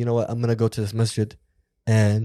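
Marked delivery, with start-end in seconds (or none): none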